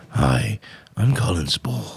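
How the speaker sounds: deep, very slow, drawn-out gravelly voice. Doing an actor's voice after saying it can be done: Colin Spall impression. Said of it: "I can do his voice now".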